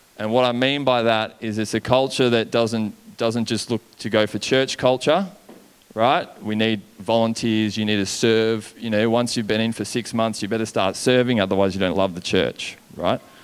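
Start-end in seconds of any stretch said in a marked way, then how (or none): none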